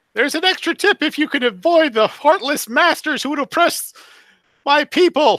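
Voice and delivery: small little voice. A voice speaks to the player after a door seems to open on its own, tiny voice. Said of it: "a tiny voice says".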